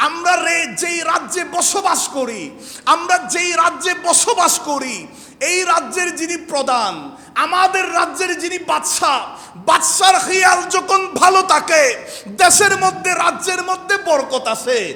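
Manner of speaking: put-on old woman voice, high and loud shouting.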